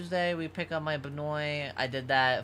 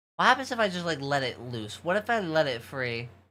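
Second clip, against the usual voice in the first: ordinary talk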